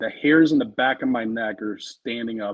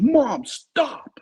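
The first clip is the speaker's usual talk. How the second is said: mock woman's scream, much higher, louder; 14 semitones higher, 3 dB louder than usual. Retelling a confusing encounter, speaker is imitating a woman screaming. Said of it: "And the woman screams again".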